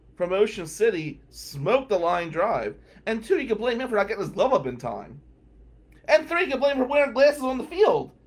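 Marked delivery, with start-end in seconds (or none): none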